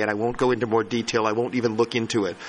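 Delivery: fast, rushed talk. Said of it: "I'm sorry for talking so fast".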